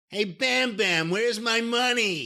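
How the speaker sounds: put-on whiny, high-pitched, slow Jersey accent. Imitating Larry Sharpe's voice while discussing a biopic: Larry Sharpe impression. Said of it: "it was like a whiny Jersey voice".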